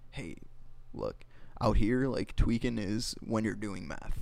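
ordinary talk

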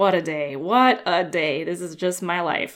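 mock muttered grumbling under breath. Retelling a woman taking measurements, mimicking grumbling under her breath. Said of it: "grumbling to herself under her breath".

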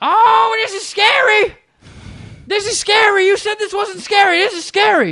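very high, shrill, loud, frantic panicked screaming. Retelling a ride beside grandparents, imitating a screaming grandma. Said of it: "the grandma out of nowhere just starts going".

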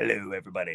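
very low, deep, bassy voice. Wishing aloud for a deep voice, trying a deep bassy Walter Cronkite voice. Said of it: "that deep, bassy voice to come out and sound like Walter Cronkite".

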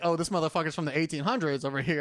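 normal talking voice

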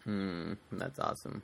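low, soft speech while swallowing water. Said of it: "I know that sounded horrible".

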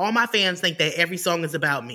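usual speaking voice

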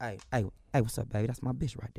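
laid-back, easygoing, relaxed drawl. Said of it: "if you say it like [name], you get away with it".

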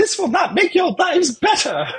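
put-on squeaky, very high-pitched British accent. Recapping a british wrestler breaking up a prison fight, imitating a british accent. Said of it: "With his British accent".

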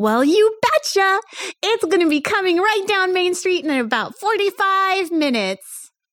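very high, little cartoon mouse voice. Answering a guest about the parade on Main Street: Mickey Mouse voice. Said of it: "And you have just been greeted by [name]".

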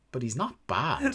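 muttered under the breath. Retelling a commentator's remark said almost under his breath: imitating someone muttering under breath. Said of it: "under his breath almost goes".

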